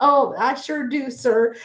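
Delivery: acted, very slow, dry, sarcastic drawl. Retelling a scene where Mac answers his boss: imitating Mac's sarcastic reply. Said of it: "It's like a sarcastic kind of".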